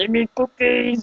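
belting it out high and loud. Announcing a Cookie Monster grief, then a bad Cookie Monster impression. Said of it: "I do a really bad impression".

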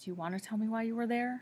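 soft, kind, gentle, quick tone. Narrator voices a man asking the narrator why they were there: asking gently. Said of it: "He asks gently".

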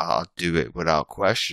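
ordinary talk

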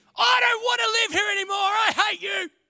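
put-on very high, shrill, loud, cranky teenage screaming. Retelling what a cranky fourteen-year-old screamed: imitating a teenager screaming. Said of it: "he screams at me".

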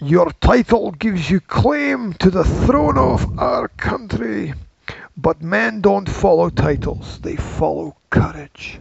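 Scottish accent, slow. Quoting a film line for someone to guess, in a scottish accent. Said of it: "because you did that accent. ... If you didn't do Scottish accent".

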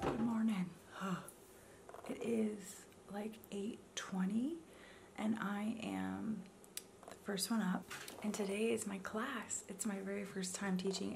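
quiet whispering. Vlogger up first in the morning while everyone is still in bed, whispering. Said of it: "I am whispering because everybody is still in bed".

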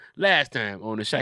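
plain

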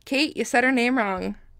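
ordinary delivery

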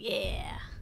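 slow, soft whisper to oneself.

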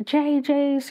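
put-on screaming. Retelling when he threw himself on the floor, re-enacting the scream. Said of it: "I start screaming and I start".

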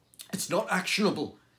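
stammered speech. The visitor, collapsed into a chair, replies: stammering. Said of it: "he stammered".

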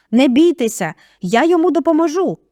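high, loud yelling voice. A man must shout over the screaming family to be heard, yelling. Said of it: "заволав він".

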